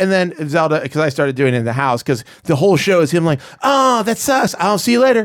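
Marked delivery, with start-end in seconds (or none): 3.6-5.3 very high, dismissive brush-off tone. Showing the others an impersonation of a TV actor: Aziz Ansari impersonation. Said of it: "this is what Aziz Ansari does".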